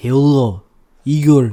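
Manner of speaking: very loud yell in bad, put-on Russian accent. Imagining people climbing and calling out, with a put-on Russian accent yelling. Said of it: "I can't yell in that accent though".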